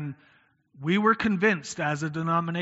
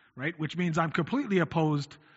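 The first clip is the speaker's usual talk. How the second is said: ordinary talk, nothing marked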